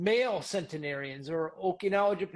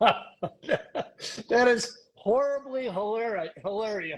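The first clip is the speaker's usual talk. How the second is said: very slow words broken by laughter; 4 semitones higher, 4 dB louder than usual. Reacting to the other speaker's joke, laughing while talking. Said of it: "I'm sorry I'm laughing at that".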